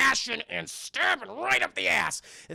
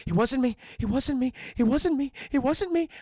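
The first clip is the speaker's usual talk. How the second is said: mock frightened, high, childlike whisper, repeated; 6 semitones higher, 4 dB louder than usual. Recapping a movie scene where Logan is scared: imitating scared Logan. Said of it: "he's scared".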